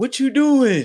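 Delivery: put-on very high little-boy voice. Mocking an older man as a little boy asking questions: imitating a little boy. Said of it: "Like a little boy".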